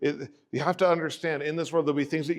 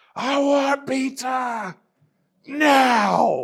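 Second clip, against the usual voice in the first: put-on very high, loud child's yell, drawn out; 10 semitones higher, 6 dB louder than usual. Parent retelling what their hungry son yelled from the car: retelling a child's yell. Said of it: "And so he yelled".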